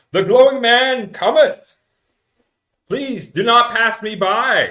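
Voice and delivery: resounding boom, very high, very loud and slow. Game master voices a figure heard calling out near the food tents, in a booming voice. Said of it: "you hear this this booming voice".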